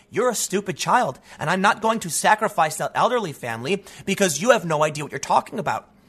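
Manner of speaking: ordinary talk, nothing marked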